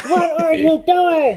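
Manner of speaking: very high, loud, stretched-out shriek. Retelling a movie scene where the brother on the phone screams: imitating a scream. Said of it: "he's screaming".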